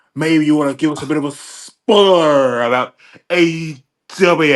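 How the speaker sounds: annoying, promo-style hype voice. Imagining being on a podcast, mocking how Cody talks. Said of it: "I'll talk like you then".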